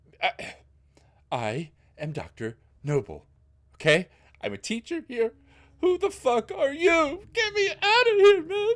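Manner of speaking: panicked, crying, tearful pleading tone. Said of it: "He just starts crying".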